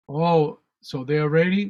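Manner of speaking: ordinary talk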